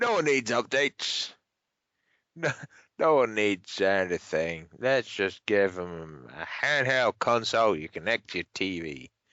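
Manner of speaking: low, odd, weird put-on American accent. Acting out the decision-makers' reasoning, in a weird American accent. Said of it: "sorry, going into a weird American accent there".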